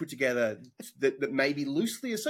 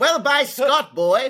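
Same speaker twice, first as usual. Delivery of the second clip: put-on very high, very loud, very slow, booming old-timey voice; 11 semitones higher, 10 dB louder than usual. Imitating another speaker's voice for the olden days: imitating an olden-days voice. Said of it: "talking about the olden days and doing this voice".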